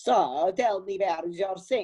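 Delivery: horrible, high, put-on Italian accent. Playing a plumber character arriving at a customer's home, horrible Italian plumber accent. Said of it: "Like this horrible, horrible accent".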